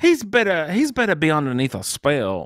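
put-on Bayou accent slipping in unbidden. Commenting on a character who should be under a spell: slipped into an accent. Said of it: "Why did I have an accent with that?".

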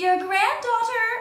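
squeaky, very high-pitched little voice. Narrator, as the granddaughter, answers Granny calling who's there: squeaky voice. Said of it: "I squeaked".

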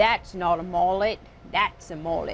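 put-on Australian accent. Discussing a mullet in Australia, channeling a Crocodile Dundee Australian accent. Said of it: "I'm going to channel Crocodile Dundee and say".

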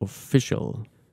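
official with stress on the second syllable -fi-. Contrasting German and English word stress, stress on fi in official. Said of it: "das englische Wort allerdings auf der zweiten Silbe".

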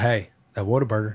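low, soft put-on Texas accent. Quoting what a man says every time you go hunting, not in his real voice, put-on Texas voice. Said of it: "Texas voice".

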